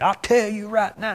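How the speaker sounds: high-pitched Southern pulpit preaching voice. Showing how they want a preacher to talk, southern preaching voice. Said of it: "talk like this right here".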